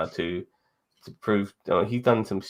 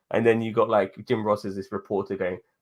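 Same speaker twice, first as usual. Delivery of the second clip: ordinary delivery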